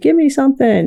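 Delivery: demanding, acted-out screaming cry. Retelling demanding something from medical staff: imitating own screaming. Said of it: "I'm screaming at medical staff".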